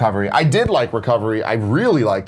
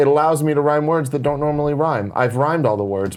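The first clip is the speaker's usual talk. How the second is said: usual speaking voice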